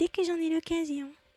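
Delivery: put-on small high girlish voice.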